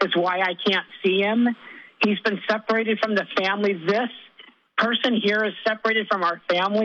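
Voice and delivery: distressed, worked-up, upset and agitated outburst. Retelling a nephew's words at a family gathering, imitating someone loud and upset. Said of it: "he was really loud and he was really upset".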